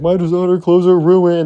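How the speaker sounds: high, bawling crybaby wail. Retelling how a spoiled kid bawled in a puddle: imitating someone bawling like a baby. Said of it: "bawling like a massive baby".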